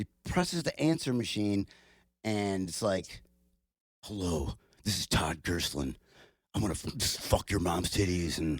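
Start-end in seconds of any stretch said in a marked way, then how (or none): 4.0-8.6 put-on, imitated, gravelly voice. Retelling a message played on an answering machine, imitating Todd Gerslin's gravelly voice. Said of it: "Did you have this gravelly voice".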